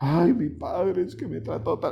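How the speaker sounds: crying lament full of bitterness, tearful. Imitating someone remembering their father: imitating a tearful lament. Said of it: "y ya estoy llorando".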